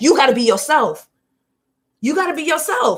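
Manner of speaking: emphatic, insistent hollering. Addressing whoever is listening, the speaker is yelling. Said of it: "I don't know who I'm yelling at right now".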